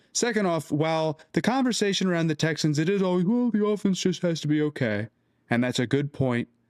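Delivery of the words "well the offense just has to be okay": put-on, mocking, dim-witted ogre voice. Speaker mocks people in the conversation around the Texans, in an ogre voice. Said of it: "like I just did in ogre voices".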